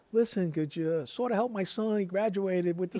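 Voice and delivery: put-on Italian accent. Recounting his mother approaching the neighbor who washed his car, in her italian accent. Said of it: "in her good Italian accent and says".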